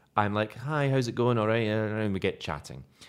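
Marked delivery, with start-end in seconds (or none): 0.6-1.7 high, half flirty, half curious voice. Retelling greeting two strangers in a bar: imitating own half-flirting greeting. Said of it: "half flirting, half curious".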